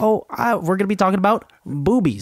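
put-on childlike voice. Mocking the other speaker for sounding like a child, imitating a childlike voice. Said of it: "you sounded like a child".

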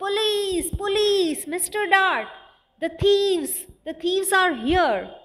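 loudest, high-pitched, all-out terrified shout. Narrator voicing a character calling for police as thieves take a painting, loudest terrified shout. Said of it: "most terrified voice".

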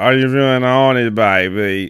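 slow, botched, stretched-out groovy British drawl. Retelling how you explained the character to someone who didn't know him, bad Austin Powers impression. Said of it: "That's not Austin Powers".

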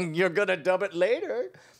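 put-on petulant, complaining voice. Retelling how David Prowse reacted to being redubbed: petulant David Prowse impression. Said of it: "he was fairly petulant".

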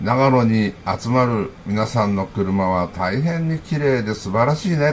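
ordinary delivery

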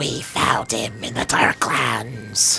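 eerie, slow, low, creaky whisper.

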